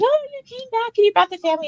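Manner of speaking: very high, fast, gushing, thrilled and excited. Retelling how the lady who runs the museum greeted her: imitating someone excited. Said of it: "She was all excited".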